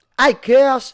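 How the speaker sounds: high, loud L A gangsta voice. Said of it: "he'll talk like".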